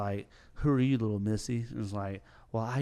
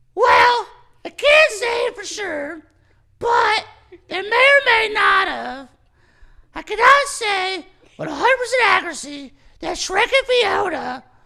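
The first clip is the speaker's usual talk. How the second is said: shrill, booming voice, pitch way up, drawn out slowly; 14 dB louder than usual. Doing a Pinocchio impression of a scene from Shrek the Third: Shrek Pinocchio impression. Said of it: "I can do Pinocchio impression".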